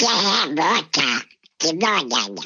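quick, garbled cartoon duck voice.

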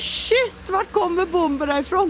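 mock-startled exclamation. Telling how a jug came flying in the women's restroom, re-enacting the reaction: retelling a startled exclamation. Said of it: "Och jag bara".

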